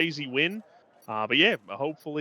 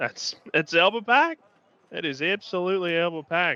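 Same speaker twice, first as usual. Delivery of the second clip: terrible fake Australian accent, slow; 4 semitones higher than usual. Reacting to a race, speaking in a terrible Australian accent. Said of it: "sorry for those terrible Australian accents".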